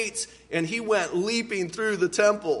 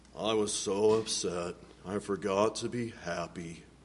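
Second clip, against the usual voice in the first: very low, soft donkey voice; 12 semitones lower, 7 dB quieter than usual. Repeating a quote from Eeyore to the audience, Eeyore voice. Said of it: "kind of a little bit of an Eeyore voice".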